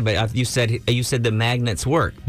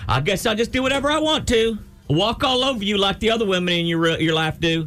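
imitated female voice; 10 semitones higher than usual. Complaining that she came in and destroyed the show, do an impression of the woman. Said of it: "That's a good impression".

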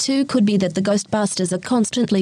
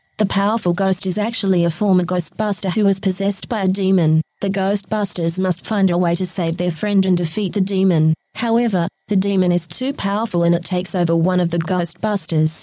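even, steady, robotic computer voice. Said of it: "this is what she had to say".

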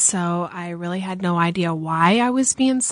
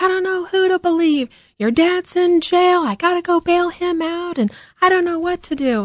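put-on very high-pitched, raised, ballistic outburst; 10 semitones higher than usual. Retelling how she reacted when asked if she believed him, imitating her going ballistic. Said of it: "she went ballistic and was like".

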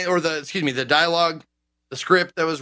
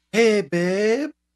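higher, sweet, cutesy pet voice. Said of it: "what would be the name of that voice you just used".

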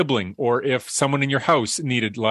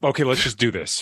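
put-on brooding, sullen, angry irritation. Reenacting own past manner with a former co-host: imitating own brooding angry self. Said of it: "I'm more of a brooding, angry, just".

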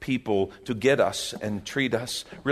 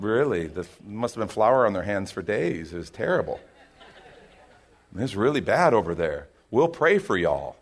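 mock sarcastic tone, lower pitch; 3 semitones lower than usual. Imitating a listener from north africa replying to his story: mock sarcastic tone. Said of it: "the sarcasm is mine".

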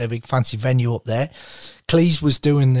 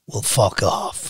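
mock drunk speech, lower; 4 semitones lower than usual. Retelling what a drunk man said when asked to sign: imitating a drunk man. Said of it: "he was very drunk".

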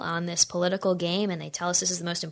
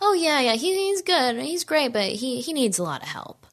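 mock, offhand, nonchalant, pitched-up tone; 6 semitones higher than usual. Retelling what a young man said about a candidate: imitating a nonchalant reply. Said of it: "kinda nonchalant".

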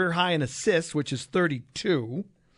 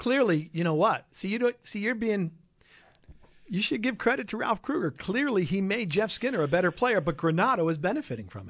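high, heavy, thick sarcasm. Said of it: "people could pick the sarcasm out of that".

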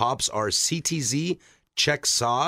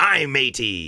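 put-on pirate voice; 4 dB louder than usual. Telling a dad joke, giving the pirate's punchline: pirate voice. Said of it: "What did the pirate say".

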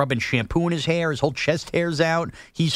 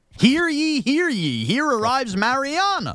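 very high, slow, swooping, sing-song royal-proclamation voice; 9 semitones higher than usual. Acting out a town crier's big arrival announcement: town crier announcement. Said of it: "that's how you do the big announcements".

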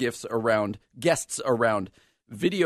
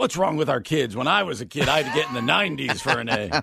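put-on voice talking like an old man. Joking about a proposed easier grading scale, imitating an old guy. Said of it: "that does sound like the old guy".

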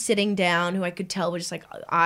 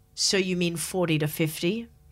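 imitated condescending tone. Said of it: "just so condescending".

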